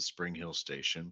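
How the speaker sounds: ordinary delivery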